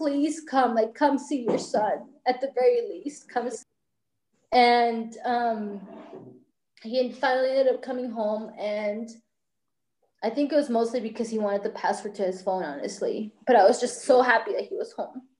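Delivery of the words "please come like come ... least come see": mock imploring, pleading, begging voice. Retelling asking him to come home to see his son: imitating begging. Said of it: "I was begging him to come home".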